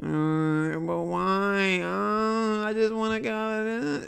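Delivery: very slow, high, dragging, drawn-out whine. Showing what whining sounds like to listeners: imitating whining. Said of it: "why are you sounding like that?".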